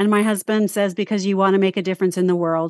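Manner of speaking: ordinary talk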